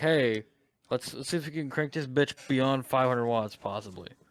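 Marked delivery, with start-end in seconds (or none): none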